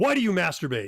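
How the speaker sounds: blaming, demanding, pointed, accusing tone. Showing how a question sounds as an accusation rather than a question, accusing tone. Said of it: "Here's an accusation".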